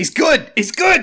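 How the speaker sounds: shrill, very high, loud screaming yell. Recalling a Mega Man X review video, retelling Egoraptor's scream. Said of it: "He just screams".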